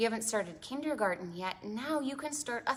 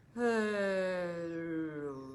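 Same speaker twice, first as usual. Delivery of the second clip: deep whale-like, very low, drawn-out voice; 2 semitones lower than usual. Host leading children to say hello as low as they can: very low whale-like hello. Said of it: "say hello as low as we can".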